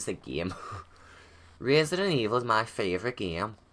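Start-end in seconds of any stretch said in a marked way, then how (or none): 1.6-3.5 accent unintentionally drifting into Irish. Speaker repeats a line and keeps going Irish, slipping into Irish accent. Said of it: "I keep going to go Irish".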